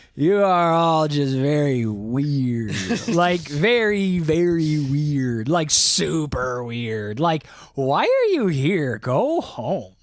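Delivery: put-on slurred voice. Acting out Joe speaking drunkenly to the live chat: slurred voice. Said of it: "Joe says in a slur voice".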